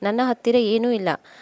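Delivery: ordinary delivery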